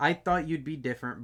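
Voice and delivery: ordinary talk, nothing marked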